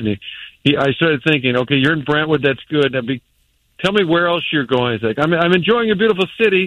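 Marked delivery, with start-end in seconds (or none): 5.2-6.7 put-on Austrian-accented speech. Quoting a man visiting St. Louis, in an Austrian accent. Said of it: "he's got a great Austrian accent".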